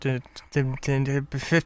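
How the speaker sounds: very slow, halting, stuck stutter on did-. Struggling to get into a screen, the speaker stutters. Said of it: "I don't know why I'm stuttering".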